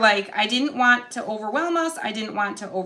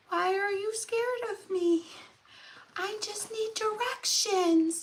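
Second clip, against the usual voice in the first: put-on high, soft, sweet little boy voice; 10 semitones higher, 7 dB quieter than usual. Retelling a werewolf-looking boy asking her for directions: sweet little boy voice. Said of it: "I hear his sweet little voice and he's like".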